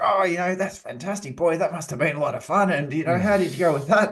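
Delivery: overly upbeat put-on voice. Retelling own reply to a client's bad news: imitating own high-energy delivery. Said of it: "in my high energy state".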